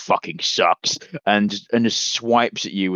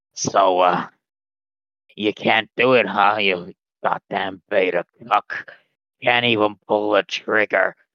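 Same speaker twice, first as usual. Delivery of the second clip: rasping, nasal monster voice. Game master voicing a figure who addresses Tyson, raspy, nasally voice. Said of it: "he says to his raspy, nasally voice".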